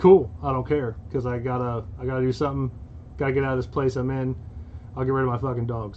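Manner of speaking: plain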